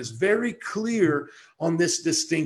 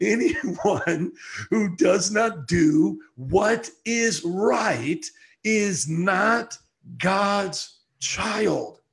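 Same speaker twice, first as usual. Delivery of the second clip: drawn-out, unhurried, slow and deliberate delivery; 2 semitones higher than usual. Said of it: "I just feel like talking slow today".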